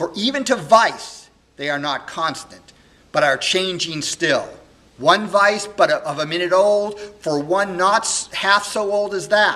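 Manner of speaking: very loud, high-pitched, grief-stricken, heartbroken furious tirade. A young man in a solo Shakespeare monologue speaks, heartbroken and very angry. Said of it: "[name] on learning this, of course, is heartbroken and very angry, / [name] is a young man who was adopted sort of as a baby by [name]. [name]' parents had died, and he's raised by [name], who's the k".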